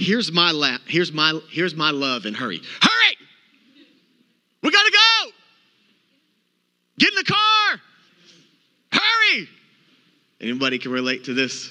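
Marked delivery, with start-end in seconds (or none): 2.8-9.5 acted-out hurried yell, much higher and louder. Preaching about hurry, acting out his own yelling when rushed. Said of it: "You do your best yelling when you're in a".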